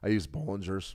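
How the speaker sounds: voice cracking and breaking. Mid-explanation, voice cracking. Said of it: "voice cracked".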